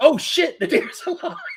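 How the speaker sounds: mock very high, panicked, freaked-out outburst. Retelling a story about a man whose car hit a deer: imitating someone freaking out. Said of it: "he's just freaking out".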